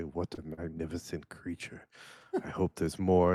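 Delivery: muttered under breath. A man thanks his friend, then adds to himself: muttered under breath. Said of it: "under his breath say".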